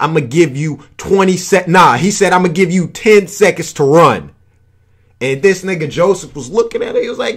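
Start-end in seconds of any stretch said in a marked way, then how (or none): none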